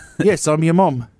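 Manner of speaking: put-on British accent. Acting out a mom who suddenly talks british after a head bonk: put-on british accent. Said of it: "all of a sudden they start talking British".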